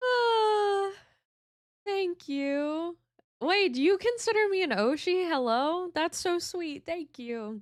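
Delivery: voice catching, near tears. Thanking the audience for kind words, choked up, near tears. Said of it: "don't fucking make me cry today".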